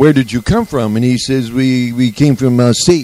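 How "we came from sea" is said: slow, put-on French accent in English. Retelling a boat man's answer to a friendly question: imitating a French accent. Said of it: "he spoke back to me with a French accent".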